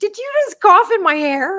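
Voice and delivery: shrill, loud, very high call-out. Retelling confronting someone who coughed on her: imitating own loud call-out. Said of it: "I said it as loud as I possibly could".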